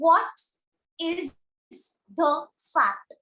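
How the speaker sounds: WHAT stressed, each word set apart by pauses. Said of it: "I'm framing a question".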